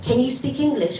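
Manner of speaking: normal talking voice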